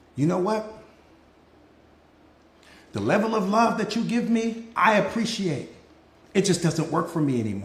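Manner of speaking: soft, hushed, half-whispered speech. Showing how to tell someone a hard truth: half-whispering. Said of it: "Whisper it to 'em".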